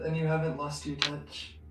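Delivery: quiet private little muttered aside. Voicing a character who quietly compliments the host's cooking: muttering under breath. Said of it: "mutter under her breath".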